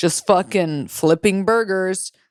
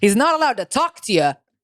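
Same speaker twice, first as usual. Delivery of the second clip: put-on New York Italian accent. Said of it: "He has a New York Italian accent".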